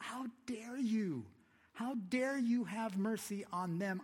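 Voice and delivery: mock indignant, very high, loud, drawn-out outrage. Retelling the Jonah story, the speaker voices Jonah: retelling Jonah's angry outburst. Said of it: "Jonah gets mad".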